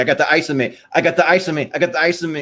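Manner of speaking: wild, panicked, freaking-out cry repeated over and over. Describing a scene, imitating Tracy Morgan freaking out. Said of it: "just like freaking out".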